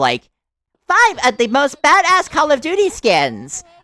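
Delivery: very high, loud, swooping synthetic AI voice. Complaining about Call of Duty skin videos, mimicking their obviously AI-generated voice. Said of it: "extremely fucking obviously A I generated voice".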